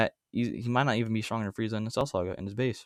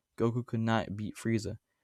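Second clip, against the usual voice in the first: normal talking voice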